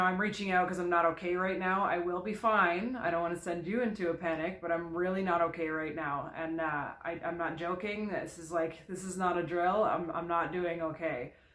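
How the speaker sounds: usual speaking voice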